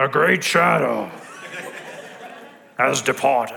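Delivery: deep, low put-on old wizard voice. Speaker offers to do a Gandalf voice for a listener: Gandalf voice. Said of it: "Should I do a Gandalf voice for you?".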